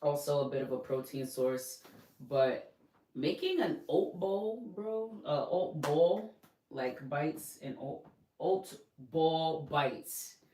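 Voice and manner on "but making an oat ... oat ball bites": drawn-out New York accent, New York vowels. Listing favorite easy snacks, the speaker's New York accent comes out. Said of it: "My New York accent's coming out here".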